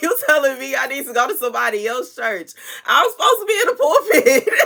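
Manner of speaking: words broken up by laughing. Telling listeners about a dream, laughing while talking. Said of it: "I'm sorry for laughing".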